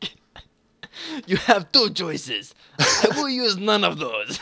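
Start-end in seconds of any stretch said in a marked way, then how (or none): 1.3-4.4 very bad Russian accent, high and slow. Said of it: "very bad attempt at a Russian accent".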